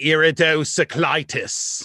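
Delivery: put-on creepy, childlike pronunciation of a word. Retelling how a spelling bee kid said the word: imitating his creepy pronunciation. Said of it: "the way he said it was like".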